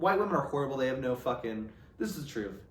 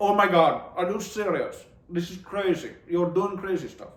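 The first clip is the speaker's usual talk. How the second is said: put-on Indian English accent throughout; 4 semitones higher, 4 dB louder than usual. Speaker saying how fun accents are, demonstrating one in an Indian accent. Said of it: "So I love a good Indian accent".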